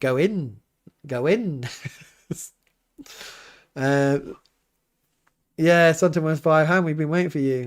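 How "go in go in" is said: very slow put-on Welsh accent. Trying the line again, the speaker says it in a Welsh accent. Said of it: "I'm saying it in a, a Welsh accent".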